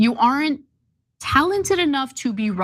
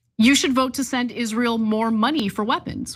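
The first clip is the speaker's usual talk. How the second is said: usual speaking voice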